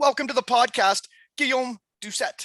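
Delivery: slight put-on British accent. Podcast host welcoming a guest, slight british accent. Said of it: "did you take like a little British accent there".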